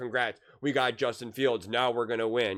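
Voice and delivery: dripping, heavy sarcasm with hollow cheer. Predicting how skeptical fans will greet their team's new player, imitating sarcastic fans. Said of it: "very sarcastically".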